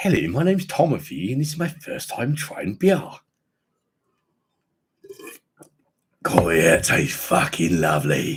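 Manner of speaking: hammed-up stupid, daft posh voice with swooping pitch. Speaker describes a character they play, doing the Tomothy Higginbottom posh voice. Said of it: "there's a character I play as a posh guy".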